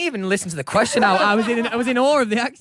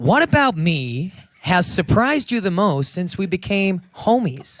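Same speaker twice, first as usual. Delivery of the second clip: put-on American accent. Asking his friend the last question of the game, in an American accent. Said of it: "[name] to Steve in an American accent".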